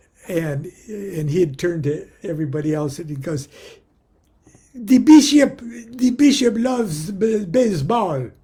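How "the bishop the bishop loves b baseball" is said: put-on heavy Pakistani accent laid on thick, loud and slow. Retelling how a friend from work interpreted for the bishop: thick Pakistani accent.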